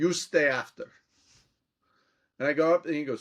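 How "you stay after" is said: put-on thick European accent, slower. Retelling a professor from Bulgaria telling the speaker to stay after class, Riddell's thick European accent. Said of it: "looks at me in this thick European accent and goes".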